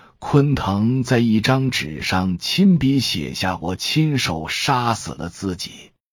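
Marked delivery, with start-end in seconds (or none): none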